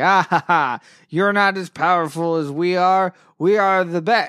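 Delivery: mock smug, taunting, gloating villain voice, cackling. Retelling a scene where Kamiorn taunts the heroes: imitating a gloating villain. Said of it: "Kamiorn is gloating".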